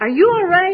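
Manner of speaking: concerned, worried, high and loud.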